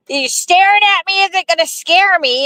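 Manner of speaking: mock, high, sudden scream. Retelling what a neighbor screamed while walking past: imitating someone screaming. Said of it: "she just fucking screams".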